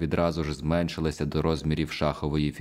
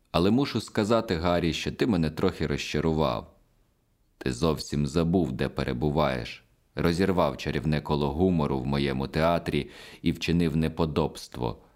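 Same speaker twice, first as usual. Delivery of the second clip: ordinary delivery, nothing marked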